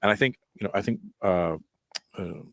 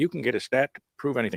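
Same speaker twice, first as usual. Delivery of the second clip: put-on offhand, pitched-up Southern American accent; 6 semitones higher than usual. Recalling stats class while studying politics, the speaker quotes a southern guy in a southern accent. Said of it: "I had like a Southern guy, and he's like".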